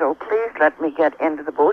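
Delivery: normal talking voice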